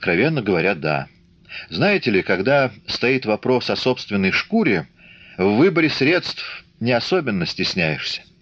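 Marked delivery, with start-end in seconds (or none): none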